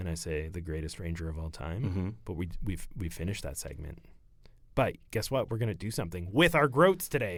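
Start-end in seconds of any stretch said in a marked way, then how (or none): 0.5-1.8 sultry put-on sexy voice, much lower, quieter. Host doing the show's usual segment bit, says the line in a low sexy voice. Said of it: "I get real down in, in my sexy voice".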